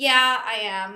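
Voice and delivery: loud, mock offhand, totally unbothered, nonchalant tone. Retelling how the husband answered when confronted: mimicking a nonchalant tone. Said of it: "totally nonchalantly".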